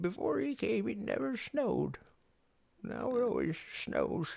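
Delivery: put-on elderly woman's voice, very high-pitched. Quoting a line from a loved film ending, old lady voice. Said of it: "That was a decent old lady voice".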